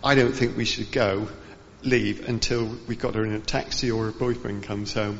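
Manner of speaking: ordinary talk, nothing marked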